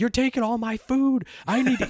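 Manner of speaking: shrill, very high screaming outburst. Speaker acts out a film character screaming at a dinosaur: imitating a character screaming. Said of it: "he's just screaming at the dinosaur".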